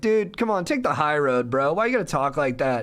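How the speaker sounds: laughing, friendly voice. Retelling how they answered a mouthy guy who insulted them, retelling a laughing, friendly reply. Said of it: "I was being nice about it. I was kind of laughing".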